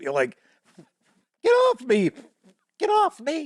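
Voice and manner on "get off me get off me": very high, exclaimed, protesting tone. Bothered by a hair on the nose, doing a Peter Brady impersonation. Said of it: "Do my best Peter Brady impersonation".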